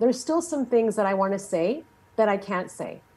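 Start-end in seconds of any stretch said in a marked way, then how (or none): none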